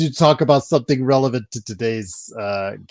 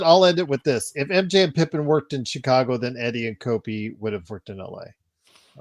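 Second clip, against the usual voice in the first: ordinary delivery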